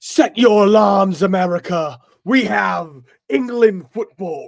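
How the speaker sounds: booming, loud, slow, over-the-top exaggerated British accent. Quoting a TV commercial announcer to the other speaker: most British accent ever. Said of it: "the most British accent guy ever".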